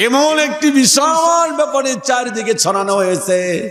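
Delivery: high, tearful, weeping wail.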